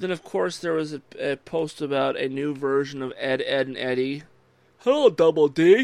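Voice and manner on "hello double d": very loud, shouted cartoon character voice. Talking about a new Ed, Edd n Eddy version: Ed, Edd n Eddy character impression. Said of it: "that was actually a pretty good impression".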